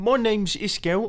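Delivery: put-on British accent. A video host introduces himself to viewers, in a british accent. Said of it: "this is me doing a British accent".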